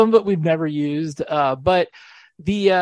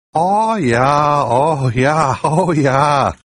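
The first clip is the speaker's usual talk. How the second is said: exaggerated Minnesota accent moan; 4 semitones lower, 5 dB louder than usual. Unveiling the new EMARO bit, exaggerated Minnesota accent moaning. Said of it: "the Exaggerated Minnesota Accent [name] Orgasm".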